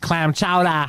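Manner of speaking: chowder said with a Boston accent. Listing accents, then showing one: Boston accent. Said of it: "Or the Boston accent".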